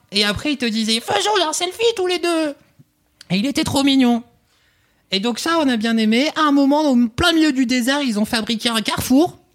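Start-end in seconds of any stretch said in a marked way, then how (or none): 1.0-2.6 put-on cute, sweet, old-fashioned toy robot voice, pitched up. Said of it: "avec cette voix trop mignonne de robot d'à l'ancienne".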